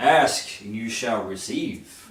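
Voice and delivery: villain voice booming, filling the whole space. Narrator voices the unseen villain answering the call to show himself; booming villain voice. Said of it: "you hear in a voice booming".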